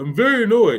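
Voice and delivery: very high, poking-fun mocking voice. Retelling what a client said on a coaching call: mocking imitation of Paul. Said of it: "I am making fun of him".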